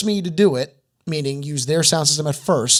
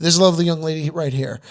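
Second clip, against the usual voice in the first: usual speaking voice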